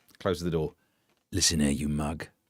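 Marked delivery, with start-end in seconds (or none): 1.3-2.3 very deep, very low, menacing, threatening voice. Imagining the king threatening someone in private: threatening King Charles voice. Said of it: "that accent just when he wanted to be threatening".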